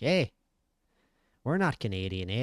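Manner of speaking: put-on Buffalo accent. Joking about a fight between a Canadian and a Buffalo fighter: mock Buffalo accent. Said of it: "That's what everyone in Buffalo talks like".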